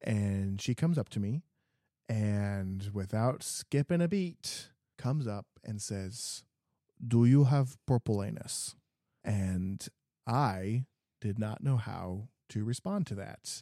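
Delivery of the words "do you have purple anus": put-on vague European accent. Retelling what a woman came up and asked, in a european accent. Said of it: "European accent".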